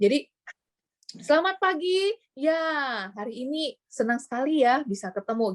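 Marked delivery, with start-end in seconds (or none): 1.2-5.5 eager, spirited, enthusiastic, pitched-up delivery. In a talk on speaking skills, showing an enthusiastic presenter's greeting: enthusiastic. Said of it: "Jadi ada antusiasnya ya, ada semangatnya gitu ya".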